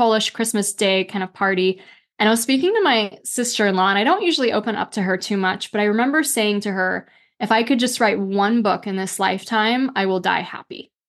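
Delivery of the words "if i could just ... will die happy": ordinary talk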